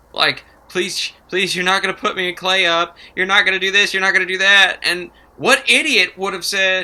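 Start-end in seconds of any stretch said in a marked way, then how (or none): 0.8-4.8 mock tearful, whiny, crying, begging tone. Retelling a contestant begging another player for a deal: imitating whining and crying. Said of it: "she just starts basically whining and crying this deal".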